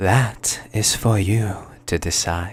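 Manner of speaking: low-key, hushed, understated delivery. A character answers while crowd voices carry on around her: hushed tone. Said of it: "speaking in this hushed tone".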